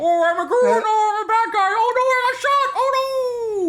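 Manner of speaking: shrill, loud, very slow, drawn-out generic game-character voice. Joking about doing voices during a slow stream: put-on generic voice. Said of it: "That's my voice for generic".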